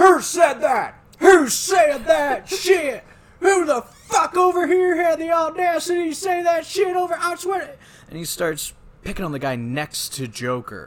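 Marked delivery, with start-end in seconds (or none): 0.0-7.7 very loud, very high, raging drill-sergeant yell. Retelling the drill sergeant's reaction to a recruit's joke, retelling a furious yell. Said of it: "the drill sergeant loses fucking shit".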